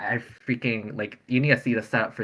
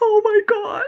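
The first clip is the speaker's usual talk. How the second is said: put-on breathless, hyperventilating, very high, shocked gasp; 7 dB louder than usual. Retelling own reaction as a vote was read: imitating own hyperventilating gasp. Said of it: "freaking hyperventilate".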